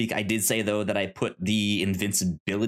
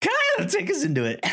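very high, squeaky, voice breaking. Repeating the other speaker's line after noticing it: imitating a voice crack. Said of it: "I like that voice crack there".

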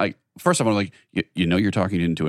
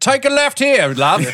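put-on British accent, very high, loud, navigation-system voice; 5 dB louder than usual. Mocking a car navigation voice giving directions, doing a put-on British accent. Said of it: "Is it good British?".

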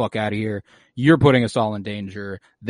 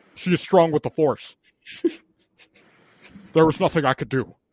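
brooding villain voice, higher-pitched; 5 semitones higher than usual. Questioned about losing the droid and the girl, Kylo answers: Kylo impression. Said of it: "That was a great impression".

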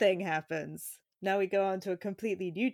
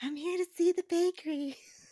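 badly done, very high, sweet tiny voice; 10 semitones higher than usual. Attempting a character's voice from a show: sweet little Lana Winters voice. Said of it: "she's got like such a sweet little voice in this. ... A bad attempt to do it".

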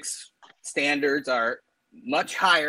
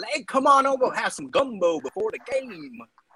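put-on Cajun accent; 8 semitones higher than usual. Comparing coaches, the speaker briefly mimics Ed Orgeron, Ed Orgeron Cajun impression. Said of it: "That's my Cajun accent".

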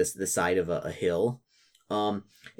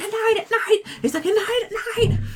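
acted goblin scream, higher and louder; 6 dB louder than usual. Voicing a captured goblin revealing the outpost's weakness: imitating a screaming goblin.

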